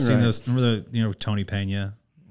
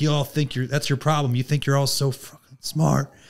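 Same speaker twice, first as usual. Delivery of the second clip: mock screaming, much higher; 4 semitones higher than usual. Speaker acting out a man screaming at a room of educated people, retelling a scream. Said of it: "He's screaming".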